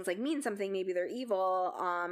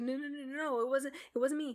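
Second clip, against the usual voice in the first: mock-frantic stammering stutter, higher pitch; 5 semitones higher than usual. Retelling how Anne denies it while the others keep pestering her: imitating frantic stuttering. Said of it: "starts getting really frantic and like stuttering".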